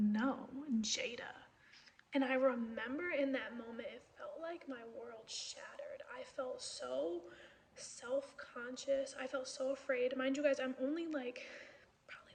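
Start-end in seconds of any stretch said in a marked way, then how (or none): 0.0-1.3 put-on, resentful tone of voice. Retelling the neighbor's reply naming the crying child: imitating a resentful voice. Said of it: "had so much resentment in her voice".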